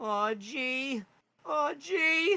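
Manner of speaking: tiny creature voice, very high, loud, slow, drawn out. Voicing a small creature in a pocket: Morty voice. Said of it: "He kinda sounds like Morty from Rick and Morty".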